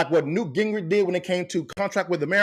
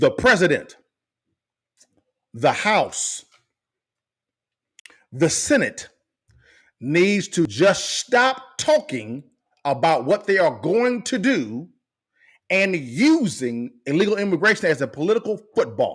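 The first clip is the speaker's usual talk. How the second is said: really slow, deliberate, word-by-word spelled-out pace. Addressing politicians directly, saying it really slow. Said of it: "I'm gonna say this really slow".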